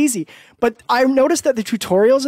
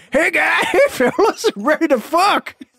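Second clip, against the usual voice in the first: put-on stupid comic voice, higher pitched; 7 semitones higher than usual. Retelling a funny movie scene, imitating Trey Parker's stupid voice. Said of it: "Trey Parker does his voice".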